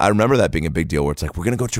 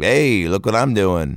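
mock-sarcastic, ironic voice. Complaining about an adult trick-or-treater at the speaker's door: mimicking a sarcastic tone. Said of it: "even your tone of voice is like ironic and sarcastic".

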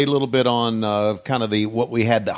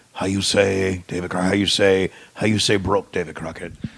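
bad, laid-on fake Russian accent; 4 semitones lower than usual. Imitating Nikita's promo catchphrase: imitating Nikita's bad Russian accent. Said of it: "the worst accent ever".

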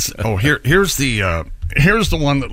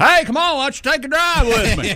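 very high-pitched put-on voice; 13 semitones higher than usual. Retelling the president driving passengers into a lake: Lyndon Johnson impersonation. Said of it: "we learned another one of your voices".

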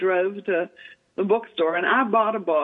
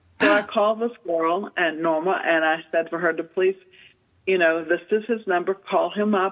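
ordinary talk

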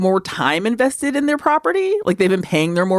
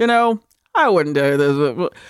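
tired, patronizing delivery; 5 semitones lower than usual. Comparing a commercial spokesman's way of talking: Wilford Brimley impression. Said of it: "that impression of Wilford Brimley that you just did".

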